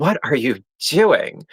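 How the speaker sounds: put-on snarky butler voice, English accent. Retelling how a show's manservant talked: imitating a snarky English-accented manservant. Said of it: "he was snarky and he was just like".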